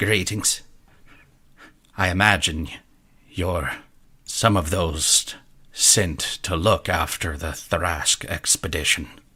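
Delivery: alien creature voice full of constant clicks. A small creature greets the newcomers, clicking creature voice. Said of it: "constant like clicking as it's talking".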